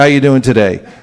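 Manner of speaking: put-on official, uncaring, indifferent clerk voice. Describing a store clerk who doesn't listen, imitating an official clerk tone. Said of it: "Their tone of voice is official".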